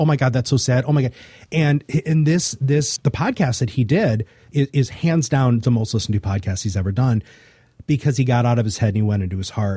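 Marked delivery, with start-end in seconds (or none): 0.0-1.1 put-on happy, tearful crying. Retelling how listeners reacted to a podcast: imitating happy crying. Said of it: "happy crying".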